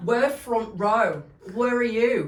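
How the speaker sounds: imitated London accent. Telling a story, the speaker acts out a stranger asking pushy questions to people standing in the front row, in a London accent. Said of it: "I'm gonna try and do the accent".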